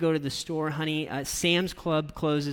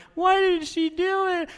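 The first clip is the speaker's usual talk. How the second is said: put-on play-acted, very high, shrill, wailing, drawn-out child bawling; 4 dB louder than usual. Retelling a six-year-old who bursts into tears: imitating a child bawling. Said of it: "she just keeps going and going".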